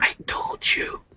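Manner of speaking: soft, hushed whisper. Voicing a character speaking to her as she blushes: whispered. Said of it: "He just like kind of whispers to her".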